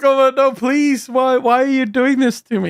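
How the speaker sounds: acted, tearful, sobbing whine. Retelling how they cry and beg: imitating someone crying. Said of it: "And then they cry".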